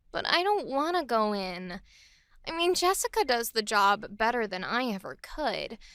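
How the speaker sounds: sulky, pouty, suggestive annoyance. Voice demo of a reluctant line in suggestive, pouty anger. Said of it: "let's try a sort of suggestive, pouty anger".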